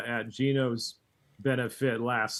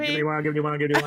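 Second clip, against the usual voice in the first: auctioneer patter, higher and louder; 4 semitones higher, 4 dB louder than usual. Answering a request to practice an auction call: auctioneer spiel. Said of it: "Are you practicing your auctioneer spiel".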